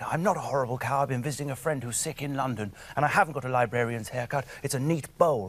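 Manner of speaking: usual speaking voice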